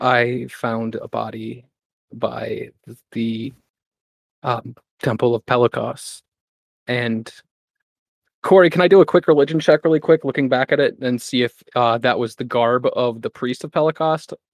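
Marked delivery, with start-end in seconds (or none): 0.0-6.2 very slow, hushed voice. Playing a character who turns to the group and speaks: hushed tone. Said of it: "So in a hushed tone".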